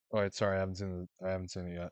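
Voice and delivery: plain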